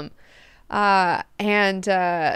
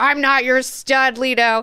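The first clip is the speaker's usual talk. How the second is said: mock yelling, slower; 3 semitones higher, 4 dB louder than usual. Retelling the line he keeps going back to with leto, retelling a yell. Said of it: "can you just stop yelling?".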